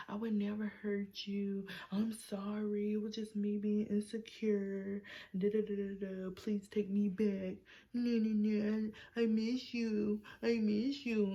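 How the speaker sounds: mock tearful pleading, fake crying. Retelling an ex pleading to be taken back: imitating someone fake crying. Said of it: "over here trying to cry".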